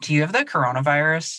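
put-on serious deadpan, kid voice. Retelling how one young kid questions the other after a sneeze, imitating a serious deadpan. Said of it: "totally like serious deadpan will be like".

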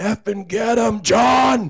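very high, dragged-out, top-of-lungs scream. Retelling a fan yelling at an exhibition hockey game: imitating Big John screaming. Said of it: "all I hear is somebody screaming".

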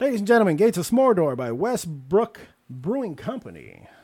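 very loud, booming, swooping radio announcer voice. Introducing the drink they're having, in a radio announcer voice. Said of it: "I got my radio voice on".

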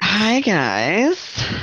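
put-on high Valley Girl accent, stretched-out "guys". Retelling how Derek greeted everyone, imitating Derek's Valley Girl accent. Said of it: "she has this Valley Girl accent".

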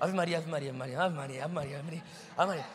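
mock frantic, desperate, looped nonstop repetition. Retelling a woman repeating a prayer during heavy turbulence: imitating a desperate woman praying. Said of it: "ela tava tão desesperada".

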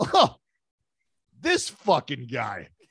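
put-on drunken-sounding voice. Retelling what was said out loud while drunk: imitating own drunk line. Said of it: "said it just, just like that".

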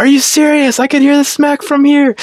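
very high, upset, full-throated, top-of-lungs yell. Recalling reacting to a late foul call in the gym, retelling a yell. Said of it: "I just yelled at the top of my lungs".

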